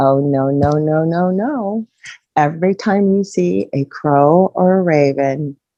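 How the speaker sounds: slow, drawn-out, mocking, jeering tone. Retelling a figure's reply in a dream: imitating a mocking tone. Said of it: "very mockingly".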